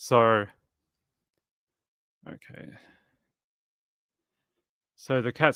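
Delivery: breathless, out of breath, catching air. Just back from trying to catch him before the cats get him, out of breath. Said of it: "sorry, I'm a bit out of breath".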